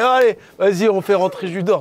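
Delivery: high, loud calling-out voice. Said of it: "il fait".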